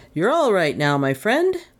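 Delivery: cheery, practiced, professional reassuring tone. Reading the doctor speaking to a strange figure he helped sit, professional cheeriness. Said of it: "in his best tones of professional cheeriness".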